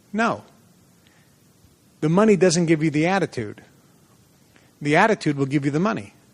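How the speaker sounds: very stern, firm, lecturing tone. Retelling what he said in reply: imitating a stern reply. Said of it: "he said very sternly".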